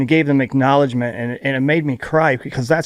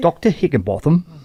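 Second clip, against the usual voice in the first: put-on British accent; 3 semitones higher than usual. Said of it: "it's British".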